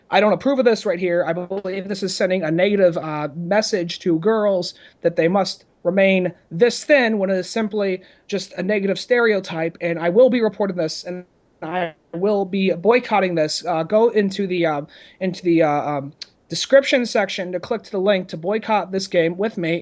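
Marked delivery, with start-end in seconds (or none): none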